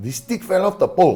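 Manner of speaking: put-on really heavy Puerto Rican accent, squeaky and very high. Mid-fight, someone suddenly calls out to the storyteller in a really thick Puerto Rican accent. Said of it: "I hear this really thick Puerto Rican accent go".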